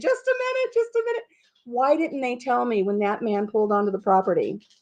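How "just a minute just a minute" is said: very high-pitched, panicked, shrieking scream. Retelling calling out to a delivery man at the door: retelling own screaming. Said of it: "and I'm screaming".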